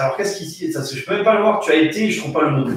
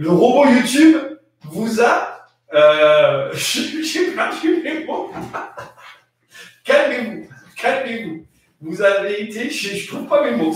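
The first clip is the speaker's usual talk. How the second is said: pitched-up, slowed speech through uncontrollable giggles; 5 semitones higher than usual. Reading viewer comments in the chat, laughing fit while talking. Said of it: "c'est la crise du fou rire".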